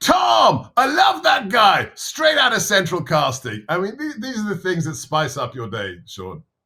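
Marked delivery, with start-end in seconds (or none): 0.0-3.7 mock very high, gushing, swooping excited yell. Retelling what another man shouted back at him, retelling an enthusiastic shout. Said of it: "he shouts back at me".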